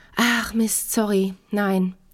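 abashed stammering. Narrator reads him answering her question about the laundry; stammering, ashamed. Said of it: "stammelt er vor sich hin und schaut beschämt".

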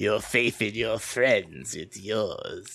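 low, theatrical evil voice. Chatting with another speaker, quoting a line in Palpatine voice. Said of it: "I'm always happy to do theater voice or Palpatine voice".

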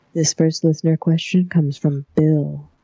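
very sultry, seductive put-on delivery. Reading out a listener question on the show in a sultry put-on voice. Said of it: "now I'm gonna put it in my sultriest voice".

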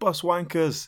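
play-acted shout, high and sudden. Retelling a scene where someone passing a bus stop shouts: imitating a shout. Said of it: "travelling past a bus stop and shouts".

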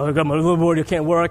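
ordinary delivery

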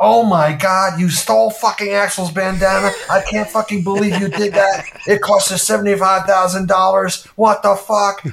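put-on high-pitched screaming. Retelling how the associate producer screamed at him, acting out her screaming. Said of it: "she's screaming at me".

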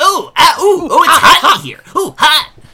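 mock very high, loud squeals and yelps of pain. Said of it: "Sonic isn't like".

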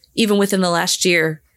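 ordinary talk

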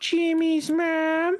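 very high-pitched cartoon boy voice. Showing the impression he does in his videos, Carl Wheezer impression. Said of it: "He always goes".

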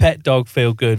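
primitive caveman speech, bare blunt words. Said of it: "it's very caveman".

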